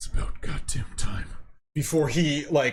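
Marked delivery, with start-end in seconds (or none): 0.0-1.3 muttered, grumbling, under-breath voice. Narrating a character turning about before throwing a firebolt, muttering under his breath. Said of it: "you can hear under his breath".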